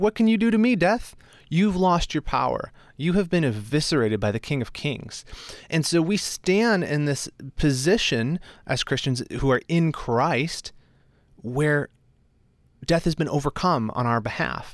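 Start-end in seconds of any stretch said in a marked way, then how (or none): 0.0-5.2 acted-out jeering, taunting voice. Acting out the Apostle Paul mocking death: imitating a taunt. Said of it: "He's like".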